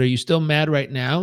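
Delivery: ordinary talk, nothing marked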